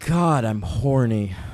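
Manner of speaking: low, soft delivery heavy with pathos. Asked for an impression of an actor's line at a scene's end, imitating a pathos-laden line reading. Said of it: "Can you give me an impression of him doing it?".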